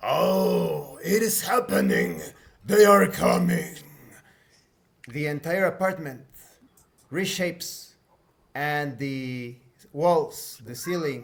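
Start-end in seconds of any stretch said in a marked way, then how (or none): 0.0-3.7 loud, rasping monster bellow, long stretched "oh". Game master voicing Pierre, who interrupts a speaking player, Pierre yelling in a monstrous voice. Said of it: "Pierre yells in a monstrous voice".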